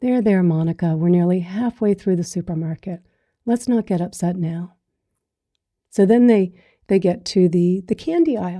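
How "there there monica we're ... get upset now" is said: gentle, very soft, calm soothing hush. Telling a story, the speaker quotes a mother to her upset little girl, retelling a soft, calm voice. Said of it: "the mother just says very softly, very calmly".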